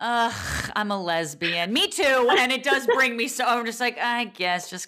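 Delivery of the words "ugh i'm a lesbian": mock-disappointed voice, much slower pace. Mimicking the other speaker's answer about identifying herself, mock-disappointed voice. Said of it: "You sound so disappointed. You're like".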